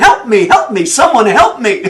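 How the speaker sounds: loud calling-out yell. Telling a joke about a man dangling from a cliff branch, retelling a yell for help. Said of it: "And he's yelling".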